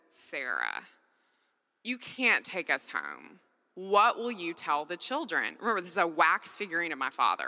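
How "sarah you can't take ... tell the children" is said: unruffled, matter-of-fact calm with swooping sing-song. Recounting a dream, the speaker quotes her dad: imitating dad's calm voice. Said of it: "He just calmly says".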